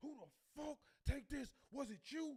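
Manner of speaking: very high-pitched, shrill, furious, angry screech. Acting out a coworker who finds his candy eaten: imitating a coworker screaming. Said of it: "he come in there screaming".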